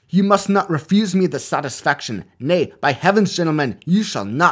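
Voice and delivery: shouted, hammy, high, terrible put-on Scottish accent. Retelling Adam Smith insisting on returning students' fees: terrible Scottish accent. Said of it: "Excuse my terrible Scottish accent here".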